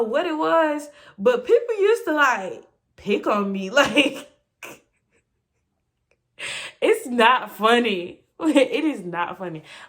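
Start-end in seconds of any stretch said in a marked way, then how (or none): 3.7-9.6 speech with laughter running through it. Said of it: "I don't know why I'm laughing".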